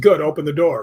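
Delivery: ordinary talk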